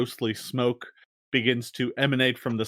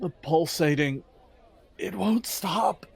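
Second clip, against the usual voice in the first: mumbled, muttering delivery, pitched up; 6 semitones higher than usual. Voicing a woman in the game who mutters in Undercommon, muttering. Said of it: "she just mutters in Undercommon".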